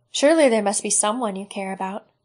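ordinary delivery

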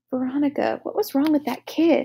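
quiet, hushed whisper. The narrator, after looking away quickly, speaks to a companion, whispered. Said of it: "I whispered".

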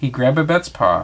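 plain

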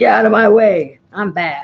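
loud, proud, swaggering put-on tough-dog voice. Voicing an old dog barking proudly after getting up: voicing a proud barking dog. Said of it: "starts barking like he's really accomplished something".

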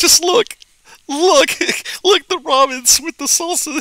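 mock cackle while speaking. Speaker retells answering friends who asked why he was laughing, retelling cackling laughter. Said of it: "I'm just cackling with laughter".

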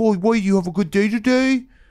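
put-on soft cooing baby talk. Showing how someone keeps on talking to a dog, in baby talk. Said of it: "if you go full baby talk to a dog".

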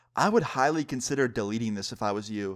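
normal talking voice

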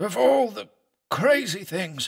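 very high, astounded, incredulous muttering. Narrator reads a doctor's reaction to the heart findings, muttered. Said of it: "he muttered".

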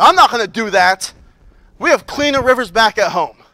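upset, put-out, grumbling tone. Retelling a story of a man refusing the prophet's command: imitating an upset refusal. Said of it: "Naaman goes away upset".

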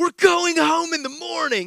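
high, frantic, freaked-out panicky insistence. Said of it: "Megan is freaking out at this moment".

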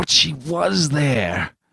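muttered groan. Narrator reading a man's line to himself, groaned to himself. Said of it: "he groaned to himself".

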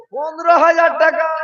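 high, loud, slow announcing voice.

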